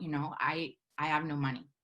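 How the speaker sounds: mock choked-up, low, very slow, drawn way out. Telling how the man behind the counter offered hot chocolate, retelling a choked-up line. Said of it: "I'm trying not to cry, and I choke out".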